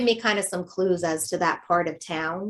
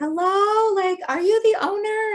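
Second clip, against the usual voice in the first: put-on very high, drawn-out yell; 13 semitones higher, 4 dB louder than usual. Retelling calling up to a person on a balcony, imitating own past yelling. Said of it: "I'm yelling up to the balcony".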